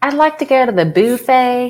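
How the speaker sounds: trying-hard put-on high Southern woman's accent. Debating how to say a word, the speaker tries a southern woman accent. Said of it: "I'm trying with my southern accent".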